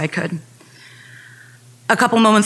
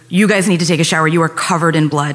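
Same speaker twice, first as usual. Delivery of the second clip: normal talking voice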